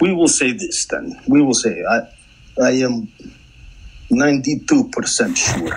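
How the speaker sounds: clumsy, bad, put-on Russian accent. Speaker restates how sure they are, in a bad Russian accent. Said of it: "Went went bad Russian accent".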